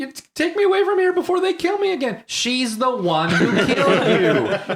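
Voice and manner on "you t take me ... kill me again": very high-pitched, forceful shrieking scream. Retelling a movie scene where the doctor screams: imitating someone screaming. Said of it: "the doctor is screaming".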